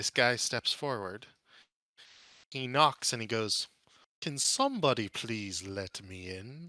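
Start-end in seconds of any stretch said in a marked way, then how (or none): 4.2-6.7 soft, quiet voice that still carries. Narrating a stranger stepping forward and knocking, soft yet well heard. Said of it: "In a soft yet well heard voice".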